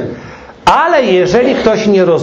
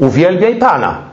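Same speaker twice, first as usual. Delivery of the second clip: put-on, barked commanding tone. Retelling what a conference leader told him, mimicking a commanding voice. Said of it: "I takim głosem nakazującym".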